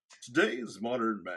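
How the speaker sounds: 1930s-style transatlantic radio announcer voice. Showing the voiceover style for a short film: 1930s transatlantic radio voice. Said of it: "The nineteen thirties transatlantic radio voice".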